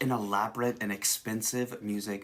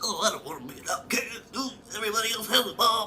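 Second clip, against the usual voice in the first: high, fast, mocking whiny kid voice. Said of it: "a one hundred percent full mocking of those people".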